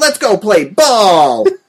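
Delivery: put-on high, slow overdubbed kid voice.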